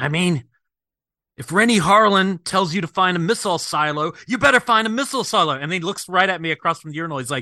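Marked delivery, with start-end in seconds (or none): 0.0-5.5 mock upset drunken ranting, pitched high. Retelling what an upset man said in a bar bathroom: imitating a drunk man. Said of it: "a man comes in really drunk".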